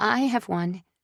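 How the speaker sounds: trembling, unsteady, high, shaky voice. Asked whether anyone has knives, a companion answers in a shaky voice. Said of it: "Lila says in a shaky voice".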